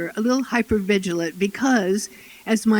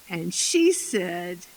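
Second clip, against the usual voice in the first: ordinary talk, nothing marked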